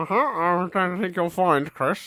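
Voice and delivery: nasal character voice. Imitating the other speaker's impression of him: nasal Mark Corrigan voice. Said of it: "your impression of me as sort of a Mark Corrigan, like, nasal".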